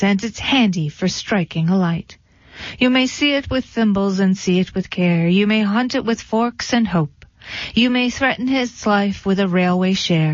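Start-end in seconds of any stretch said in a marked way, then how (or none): none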